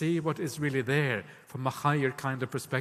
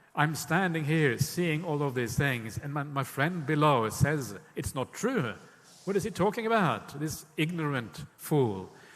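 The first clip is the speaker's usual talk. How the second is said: ordinary talk, nothing marked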